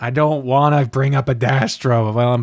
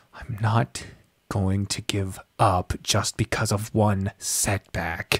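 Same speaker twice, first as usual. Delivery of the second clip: almost a whisper, gentle, soft, unhurried; 3 semitones lower, 7 dB quieter than usual. Narrator reads the hero's reply, said softly, almost a whisper. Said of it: "It's almost a whisper".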